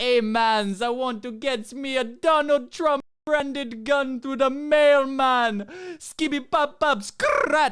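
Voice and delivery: very high-pitched, slow put-on Jamaican accent. Retelling what a Toronto man said when ordering a gun: put-on Jamaican accent. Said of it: "he spoke like a Jamaican".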